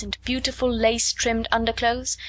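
ordinary delivery, nothing marked

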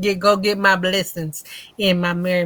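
ordinary delivery

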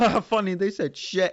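speaking through laughter. Retelling pointing out a rude word to mum as a child: retelling own childhood laughter. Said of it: "and then start laughing".

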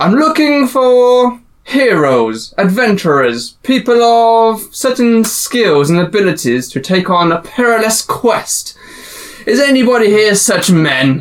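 high, royal proclaiming voice, projected loudly. A royal figure enters a tavern and addresses everyone: royal announcement to a crowd. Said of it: "He announces to everyone in the tavern".

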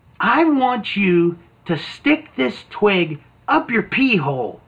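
conspiratorial stage whisper. Retelling a cartoon scene where the girls half-whisper over: imitating a half-whisper. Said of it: "the girls whisper over".

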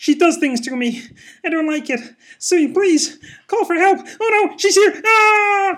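shriek with stretched-out final ah. After the others say goodbye, a speaker does sexually repressed Kermit voice. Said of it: "do sexually repressed Kermit again".

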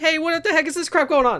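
loud, shrill, very high-pitched blurted outburst. Imagining a game scene where a different robot speaks: Claptrap voice. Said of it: "the voice of the Claptrap".

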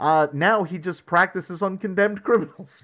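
high, loud, laughing, joking delivery.

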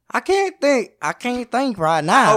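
cracking hillbilly voice. Retelling what a woman answered when asked about weird pickups: imitating her in a hillbilly-sounding voice. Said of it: "That sounds like a hillbilly".

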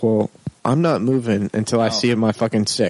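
normal talking voice

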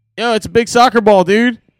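put-on accent of Fishtown. Retelling what a friend said about a soccer ball: imitating a thick Fishtown accent. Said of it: "super fishtown accent".

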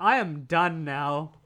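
sarcastic, snarky, very drawn-out slow drawl. Retelling a movie character's reply, imitating a snarky tone. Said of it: "he's so snarky".

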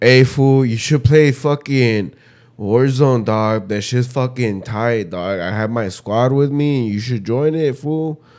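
tough, laid-back street-slang voice.

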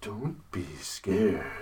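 very hushed, low, very soft, eerie dinosaur voice. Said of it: "That's pretty creepy".

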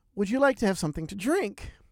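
inviting, irresistible Irish brogue. Retelling what Claire asked when she came over, in Claire's Irish brogue. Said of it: "in a wonderful Irish brogue".

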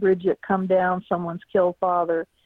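ordinary delivery

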